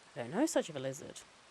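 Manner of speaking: usual speaking voice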